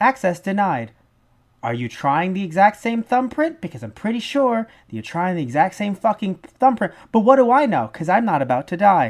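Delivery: snarky, sarcastic security-system machine voice. Imagining the movie's access system talking: imitating a sarcastic access-control voice. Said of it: "I just imagine just".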